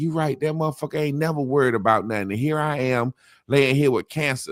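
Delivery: mock distressed, heartfelt, deeply upset lamenting tone. Retelling a sick friend's reaction from his bed, imitating an upset friend. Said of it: "my man just so upset".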